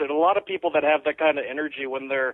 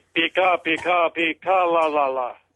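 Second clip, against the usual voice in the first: slow character voice, each word drawn out. Imitating how Zach would do Pika: imitating Zach's Pica voice. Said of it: "Zach's Pika would probably be".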